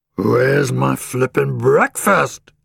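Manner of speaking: rough, grumpy, grumbling growl. A narrator reading a story voices a hungry camel, growling. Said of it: "he growled".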